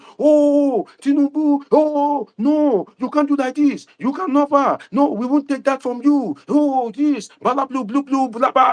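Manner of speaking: put-on shrill, very high, drawn-out screaming outcry. Speaker retells how people reacted to Tinubu's appointments, imitating people screaming. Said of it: "he not have started screaming".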